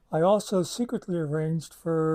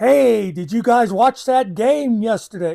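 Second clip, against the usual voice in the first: loud, slow, high-pitched shouted chatter. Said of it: "They were talking like this".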